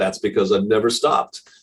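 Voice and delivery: sarcastic, pointed delivery. Retelling his answer to people asking about consistency: retelling own sarcastic reply. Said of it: "I sarcastically say back".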